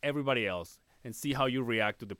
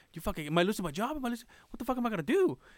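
mock panic, much higher pitch; 11 semitones higher than usual. Recalling fearing for his job, replaying his own words: retelling freaking out. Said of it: "I'm like freaking out".

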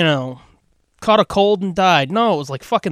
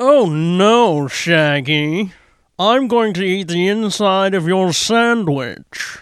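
put-on snooty upper-class voice. Joking about a talking Scooby: Thurston Howell voice. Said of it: "Suddenly he's Thurston Howell".

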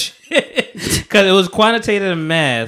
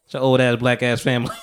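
ordinary talk

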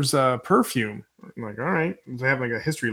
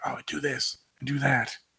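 hushed whisper, under the breath; 4 dB quieter than usual. Recapping an episode, quoting Louis Lalak behind a door: imitating Louis Lalak whispering.

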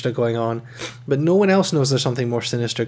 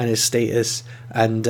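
ordinary talk, nothing marked

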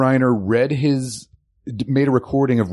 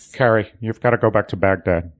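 put-on puppet-like voice, pitched lower; 3 semitones lower than usual. Quoting a Homeland scene in Mandy Patinkin's voice: Mandy Patinkin impression. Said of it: "That wasn't a spot on, uh, Mandy Patinkin?".

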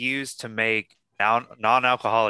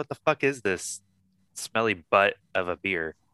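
usual speaking voice

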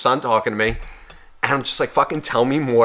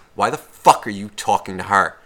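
whispered, in a lower pitch; 5 semitones lower than usual. Retelling what a short woman said into his ear: imitating a whisper. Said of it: "I get a whisper in my right ear".

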